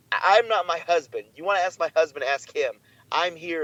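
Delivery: ordinary delivery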